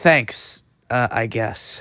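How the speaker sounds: slow, halting, doubtful and unconvinced delivery. Answering an apology from a friend: unconvinced, hesitant thanks. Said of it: "why are you saying it like that?".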